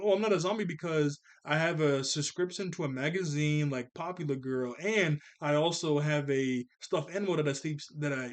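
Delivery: normal talking voice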